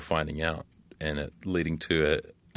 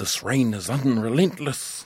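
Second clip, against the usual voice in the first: thick, broad Māori accent, loud and high; 7 semitones higher, 6 dB louder than usual. Describing characters who use university terms, speaking in a broad Māori accent. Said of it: "saying them in a broad Māori accent".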